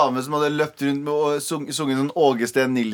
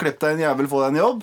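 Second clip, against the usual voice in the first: ordinary talk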